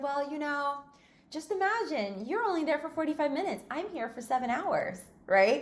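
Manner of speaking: put-on very sweet, kindly, lightly high voice. Retelling what was said to an upset customer: imitating her own sweet tone. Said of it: "in a very sweet way".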